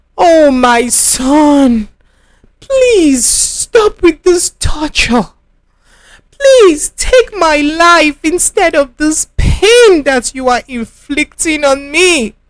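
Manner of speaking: pained voice, crying out, carrying. A woman at a hospital cries out to her son, in pain, voice carrying. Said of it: "[name]'s voice carried down the corridor. / She writhed in pain, / I didn't want to put the accident substance in your food".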